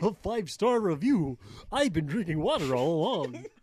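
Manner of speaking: goofy silly put-on voice. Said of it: "[name]'s voice is goofy".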